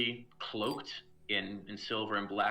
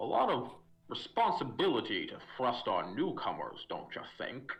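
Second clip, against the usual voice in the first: bubbling, gurgly, swooping fish-creature voice; 3 semitones higher than usual. Narrating a game scene, voicing the fish guy to the newcomers; burbly fish-creature voice. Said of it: "kind of burbly voice says".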